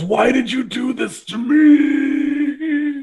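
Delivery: very slow, high, drawn-out yell fading out. The game master voices a figure yelling at the player who messed up his writing. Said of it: "He yells".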